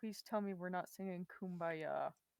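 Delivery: muttering under breath. A player's character reluctantly holds hands in a group: reluctant mutter under breath. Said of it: "mutter under my breath".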